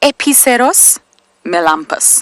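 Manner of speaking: playful Latin accent. Pronouncing an animal's Latin name, in a little put-on Latin accent. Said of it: "I put on a little accent there. I hope you enjoyed it, my Latin accent".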